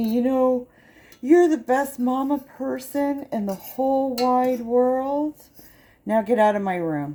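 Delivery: mock slurred drunk speech. Retelling what a drunk son said in bed: imitating a drunk son slurring.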